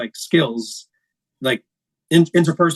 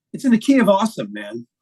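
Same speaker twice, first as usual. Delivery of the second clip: put-on silly, sarcastic, pitched-up dude voice; 5 semitones higher than usual. Retelling own reply to a fill-in bassist: imitating own sarcastic reply. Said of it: "as a sarcastic".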